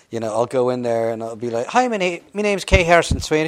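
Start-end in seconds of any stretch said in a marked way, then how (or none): 1.6-3.5 fake Irish accent, higher and louder. Retelling going into an audition in character: put-on irish accent. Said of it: "I audition like that all the time".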